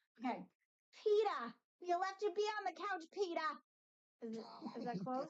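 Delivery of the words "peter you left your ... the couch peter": high-pitched put-on Alabama accent. Attempting an impression for someone, Lois Griffin voice. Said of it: "I'm gonna try to do Lois Griffin from Alabama".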